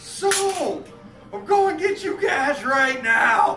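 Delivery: mock shouting. Retelling yelling out a rolled-down car window: imitating a yell. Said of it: "yelled at him".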